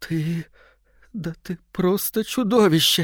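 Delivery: high-pitched, terrified moan, barely holding on. A narrator reads a tearful wife staring at her husband: terrified moan. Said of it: "едва живая от ужаса, простонала".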